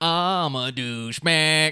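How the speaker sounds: teasing, ribbing put-on voice. Doing an impression of Jason for the others: imitating Jason. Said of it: "I can do an impression of Jason".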